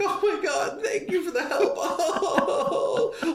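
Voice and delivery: crying, very high and drawn out. Retelling a caller thanking a radio host: imitating someone crying. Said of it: "literally crying, like".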